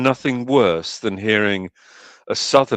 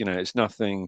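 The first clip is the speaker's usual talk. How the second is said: usual speaking voice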